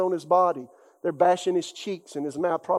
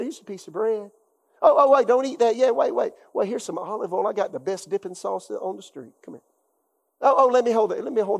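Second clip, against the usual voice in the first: kindly, warm, hospitable and friendly tone; 3 semitones higher than usual. Retelling how Jesus greets Judas at the meal: imitating Jesus being kind. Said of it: "He said".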